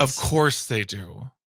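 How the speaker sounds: sarcastic tone. Answering a co-host who insists red candies taste different: sarcastic. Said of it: "I'm being sarcastic".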